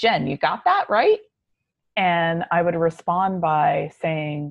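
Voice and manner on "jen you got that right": put-on Brooklyn accent with raised pitch. Quoting a mentor's habitual question: Zachary Fisher's Brooklyn accent. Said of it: "would always say in his Brooklyn accent".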